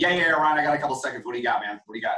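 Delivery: rushed, impatient, fast hurried patter of a busy guy. Imitating a prospect on the phone: imitating a fast talker. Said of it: "if the person's fast talking".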